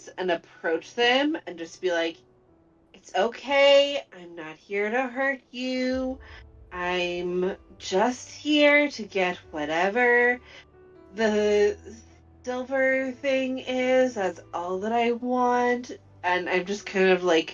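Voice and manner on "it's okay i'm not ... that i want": slow, drawn-out, gentle and soothing calm voice. In a game, approaching them to get the silver thing, very calming tones. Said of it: "I'm gonna speak in very calming tones".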